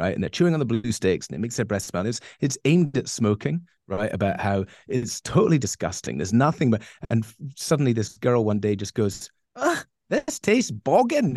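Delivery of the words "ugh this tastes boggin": put-on full Scottish accent, very high and swooping. Retelling a cartoon girl's line from an advert: imitating a Scottish accent. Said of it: "in a totally Scottish accent".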